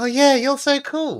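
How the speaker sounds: high, slightly sarcastic. Showing a compliment said sincerely that still sounds slightly sarcastic. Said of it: "still sounded a little bit sarcastic".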